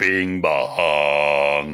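deep foghorn drone, "bong" stretched very low. Repeating the other speaker's "bing bong" greeting: put-on low foghorn voice. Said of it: "you sound like the, uh, the foghorn".

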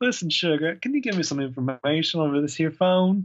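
put-on Southern American accent. Imitating a TV character's phone call: put-on Southern accent. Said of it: "why is she doing a Southern accent?".

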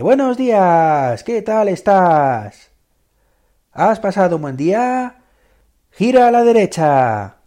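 put-on, high, drawn-out, excessively happy, upbeat voice. Imitating a voice that seems excessively happy: mock overly cheerful voice. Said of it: "Con ese tono que dices".

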